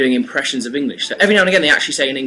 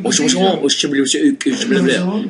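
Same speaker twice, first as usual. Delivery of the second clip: put-on French accent. Showing how people do an impression of a French person: put-on French accent impression. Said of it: "impression of someone who's maybe, like, a French".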